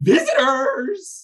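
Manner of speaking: donkey-like braying creature voice. Voicing a cloaked figure slamming against the gates: donkey-like braying voice. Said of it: "a donkey-like voice brays out".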